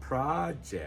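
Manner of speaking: pro in project strongly stressed, leading the word. Explaining the noun pronunciation of a word, stress on pro in project. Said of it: "where the stress is on the first syllable".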